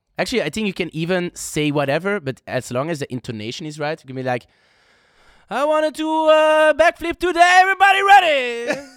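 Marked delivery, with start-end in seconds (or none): 5.5-8.8 very high, loud, crowd-warming hype-man call. Showing how to talk to a crowd so they'll scream, higher voice. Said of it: "if you go higher in your voice".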